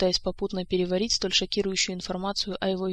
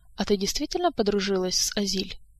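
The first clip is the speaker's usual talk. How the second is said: usual speaking voice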